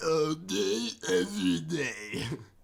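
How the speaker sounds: very loud, put-on voice with tongue curled. Speaker repeating a phrase over and over: folded-tongue voice. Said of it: "You're like folding your tongue when you do it".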